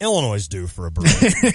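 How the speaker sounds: very subtle, understated tone with swooping pitch. Retelling what Mike Carpenter said last week: imitating Mike Carpenter's subtle voice. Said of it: "in a real subtle voice".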